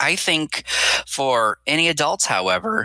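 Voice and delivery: voice cracking. Mid-discussion on a show where this keeps happening, voice cracking. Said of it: "my voice is cracking".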